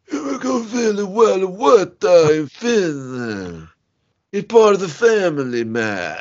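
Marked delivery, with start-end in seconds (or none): 0.7-3.7 really bad fake Italian accent, much higher, slower. Reading out a listener's name and place, in a really bad italian accent. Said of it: "Should I read the rest of them in that voice?".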